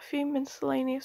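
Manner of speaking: ordinary delivery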